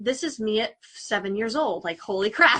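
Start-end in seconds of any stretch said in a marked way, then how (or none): none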